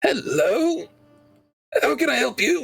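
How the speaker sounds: very high-pitched, near-death dying voice. Playing the brother answering a phone call, sounding like you're dying. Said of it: "You sound like you're dying".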